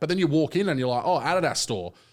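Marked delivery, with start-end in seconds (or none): none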